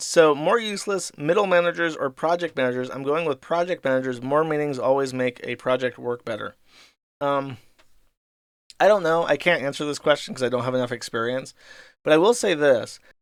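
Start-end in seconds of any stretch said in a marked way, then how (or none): none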